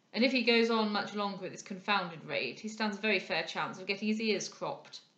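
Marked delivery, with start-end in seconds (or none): none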